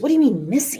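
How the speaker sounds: mock irritated, annoyed and disbelieving tone. Retelling a phone call about a missing person, imitating Sharon Rocha, annoyed. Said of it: "and she was annoyed".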